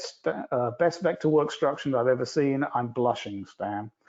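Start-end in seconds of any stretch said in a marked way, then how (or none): none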